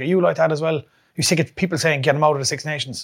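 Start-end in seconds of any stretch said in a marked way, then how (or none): none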